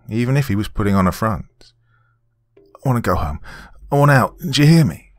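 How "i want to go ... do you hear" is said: shaking, trembling voice, higher pitch. Reading a story aloud, a restrained captive begs to go home: shaking voice. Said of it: "Rory's voice was shaking".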